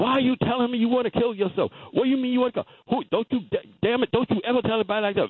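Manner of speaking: mock angry, hollered screaming. Retelling how his mother screamed at him after he woke: imitating his mother screaming. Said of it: "she's screaming and hollering".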